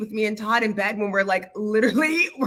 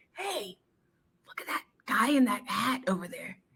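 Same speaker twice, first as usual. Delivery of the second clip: hushed stage whisper meant to carry; 8 dB quieter than usual. Retelling pointing out a guy in a hat: retelling a loud whisper. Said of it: "I'm trying to whisper things like".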